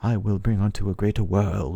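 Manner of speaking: put-on loose, rough, generic British accent. Retelling a boss's generic line in the game: British accent imitating Miquella. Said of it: "like, a British accent, kind of".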